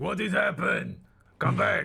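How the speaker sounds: very high, rough, shouted yell. Hearing a scream down the tunnel, your character is shouting through. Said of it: "I'm like shouting through too".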